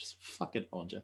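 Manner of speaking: muttering under breath. Voicing a character shaking their head at the damage: muttering under breath. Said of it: "I shake my head under my breath".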